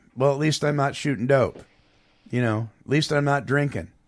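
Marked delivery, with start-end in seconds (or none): none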